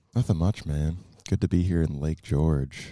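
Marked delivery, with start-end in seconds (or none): 1.2-2.9 radio announcer voice with rich bass. Saying it is good to be here in Lake George: radio voice with good bass. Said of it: "That sounded very radio-esque".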